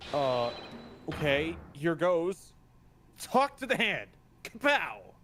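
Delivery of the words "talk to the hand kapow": dramatic, theatrical delivery. Asked to sell a funny barb for viewers: selling a dramatic barb. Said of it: "you gotta sell it".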